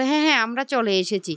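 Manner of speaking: ordinary delivery, nothing marked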